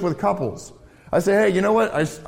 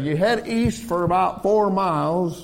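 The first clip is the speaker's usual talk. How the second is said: put-on Southern country old-farmer accent; 2 semitones higher than usual. Giving directions as an old farmer in Illinois, southern old-farmer accent. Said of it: "they don't have southern accents in Illinois".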